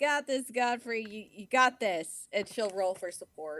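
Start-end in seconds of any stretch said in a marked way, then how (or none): 0.0-2.1 encouraging shout, higher. Playing a character cheering someone on below: yelling encouragement down. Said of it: "she can yell down".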